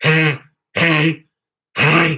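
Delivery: scary, monstrous demon-like voice. Showing off a throat trick while greeting people, in a demon voice. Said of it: "scaring everybody with a demon voice".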